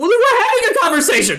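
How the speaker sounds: shouting. Voicing Cecily, who chases Suni insisting she isn't upset: in-character yelling. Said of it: "you're yelling at me".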